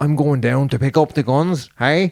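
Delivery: bad, hammed-up half Dublin, half Northern Irish accent. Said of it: "half Dublin and half from Northern Ireland".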